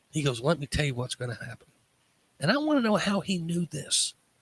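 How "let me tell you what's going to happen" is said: put-on whisper, quieter. Retelling what a doctor said alone in the room: imitating a doctor whispering. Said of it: "And he starts whispering".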